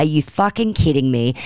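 ordinary delivery

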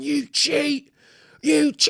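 high, loud, furious, angry yell.

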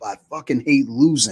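screaming outburst. Recalling a friend after losing a backyard football game; retelling a scream. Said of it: "he's screaming like".

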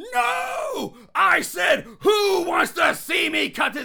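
very high, drawn-out, hyped-up crowd-working delivery. Retelling a movie character hyping up a crowd: imitating D-Generation X Triple H hype. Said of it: "very D X Triple H".

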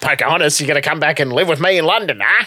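imitated Australian accent. Quoting a jarring line to pocahontas from a weird film, in an imitated australian accent. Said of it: "he's almost gone into his like his Australian accent".

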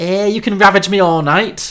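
put-on Liverpool Scouse accent. Reading a plot summary aloud, voicing a character's reply in Scouse accent. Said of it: "in her Scouse accent".

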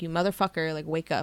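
normal talking voice

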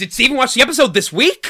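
very high, loud, frazzled and stressed voice. Podcast hosts recapping an episode; one asks a question in a stressed Chidi impression. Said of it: "do my best stress Chidi impression".

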